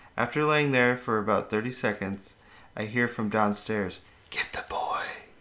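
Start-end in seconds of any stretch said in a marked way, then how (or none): 4.3-5.0 raspy, wispy, whispery voice. Reading a ghost story aloud, a voice from downstairs: raspy, wispy voice. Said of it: "in a very raspy, wispy voice".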